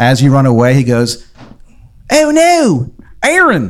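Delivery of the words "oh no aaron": lousy put-on Maryland accent, pitched way up high. Speaker retells a man calling after Aaron as he runs away, bad Maryland accent. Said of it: "the shittiest Maryland accent you have ever heard".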